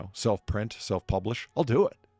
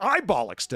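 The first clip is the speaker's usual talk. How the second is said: mock affronted, indignant, pitched-up tone; 7 semitones higher than usual. Retelling her reply in the movie argument: imitating an indignant retort. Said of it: "as they get increasingly indignant".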